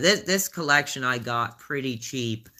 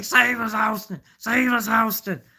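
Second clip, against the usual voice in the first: wild, excited ringside hollering shout; 10 semitones higher, 4 dB louder than usual. Recalling a wrestling show commentator's call: JR hollering impression. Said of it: "He starts hollering like".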